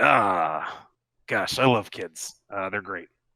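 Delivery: speaking through a chuckle, drawn-out ah. Voicing a hooded figure who turns to you and speaks, chuckling while talking. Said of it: "chuckling, and just says".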